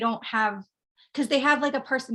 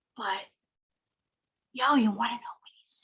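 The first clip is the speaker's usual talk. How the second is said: acted-out, put-on whisper. Speaker re-enacts huddling in a corner of the house, retelling a whisper. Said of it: "like whispering".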